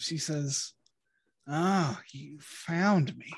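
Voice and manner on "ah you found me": feeble, weak, very slow delivery. As a chained captive the players have found, greeting them, weak voice. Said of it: "And she sounds so weak".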